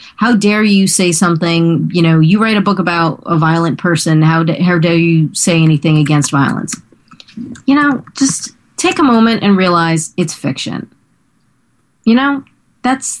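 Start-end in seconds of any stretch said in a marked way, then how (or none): none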